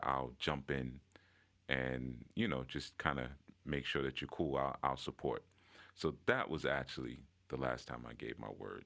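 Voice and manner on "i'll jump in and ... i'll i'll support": ordinary talk, nothing marked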